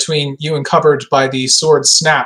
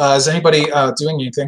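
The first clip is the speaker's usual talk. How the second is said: plain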